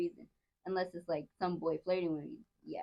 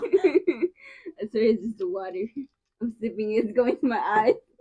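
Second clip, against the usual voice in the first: very loud, high, swooping talk through laughter; 6 semitones higher, 12 dB louder than usual. Answering a friend who asks about tears: laughing while talking. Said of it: "are you crying from laughing so hard?".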